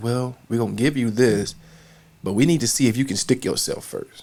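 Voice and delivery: ordinary talk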